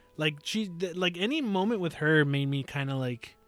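usual speaking voice

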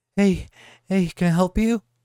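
huffing, heavy breathing. Retelling what a teacher said on opening the door: imitating heavy breathing. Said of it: "breathing really heavy".

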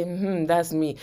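quiet, soft, low private tone to oneself.

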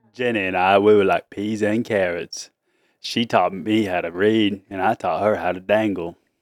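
low, slow Southern drawl. A dad, urged by his family, does a Forrest Gump impression. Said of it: "I can do Forrest Gump".

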